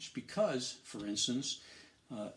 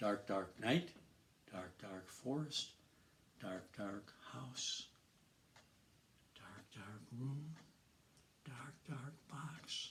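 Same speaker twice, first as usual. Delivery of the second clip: fading step by step, growing softer to hushed; 9 dB quieter than usual. Demonstrating how to tell a dark, dark story, voice getting softer and softer. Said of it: "Your voice is getting softer".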